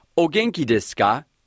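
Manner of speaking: ordinary talk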